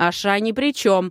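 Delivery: speaking up loudly. In a heated argument in a drawing room, a woman speaks up: raised voice. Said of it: "повысила голос Серпента".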